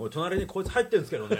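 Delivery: loud, showy put-on big voice. Retelling what was said while on the toilet: retelling a loud remark. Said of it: "もうでっかい声で言いましたもん".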